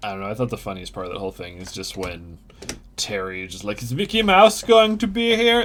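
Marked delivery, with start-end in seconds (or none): 3.8-5.6 put-on very high, very loud, thick French accent. Retelling what Terry asks in the film: imitating Terry in a thick French accent. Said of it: "in a very thick French accent".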